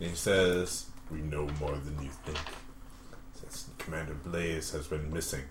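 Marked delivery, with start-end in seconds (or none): 1.1-5.4 deep, dark shadowy voice, very low and quiet. Narrating a tabletop game, voicing a character speaking to the group, deep dark shadowy voice. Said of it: "He says in a deep dark shadowy voice".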